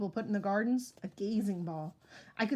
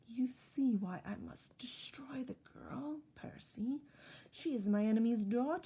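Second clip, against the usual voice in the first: soothing, gentle, soft, comforting purr; 2 semitones higher, 5 dB quieter than usual. Reading a character whose voice turns back after an outburst, soft comforting purr. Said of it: "her voice modulated back to a comforting purr".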